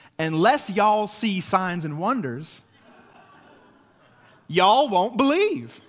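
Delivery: generic, all-purpose Southern US accent. Reading a Bible verse as a joke Southern version, in a generic Southern accent. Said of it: "I don't know where that accent is from. It's just generic Southern".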